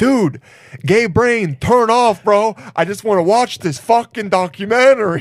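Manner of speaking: berating tone in an Italian accent.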